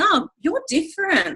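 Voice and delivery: high, wide-pitched, gushing, exclaiming tone.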